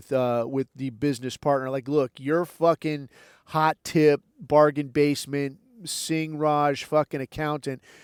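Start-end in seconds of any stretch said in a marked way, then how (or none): none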